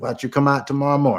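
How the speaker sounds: put-on easy, relaxed Creole accent. Retelling a phone call with a boat owner: imitating a Creole accent. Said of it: "good Creole accent".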